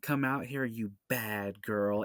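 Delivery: mock awkward, clunky villain line delivery. Imitating a movie villain pulling a gun: imitating a clunky line delivery. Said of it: "such a clunky line delivery".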